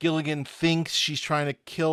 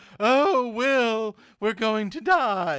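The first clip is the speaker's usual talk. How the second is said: sniveling, high-pitched and drawn out; 7 semitones higher, 3 dB louder than usual. Doing an impression of a sniveling character: Doctor Smith impression. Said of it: "my Doctor Smith".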